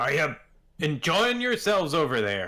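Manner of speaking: loud, swooping call-out projected across distance. Voicing a bar owner calling to guests from behind the counter: crying out. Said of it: "Thandal cries out from behind the".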